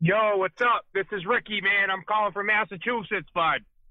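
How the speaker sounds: very amped, hyped-up voice, pitched high. A caller phoning into the show, greeting the hosts: hyped up. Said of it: "You sound wicked hype right now".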